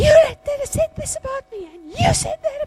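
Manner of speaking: very high, shrill, loud screaming rant. Retelling how she started screaming at the speaker: imitating someone screaming. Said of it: "she starts screaming".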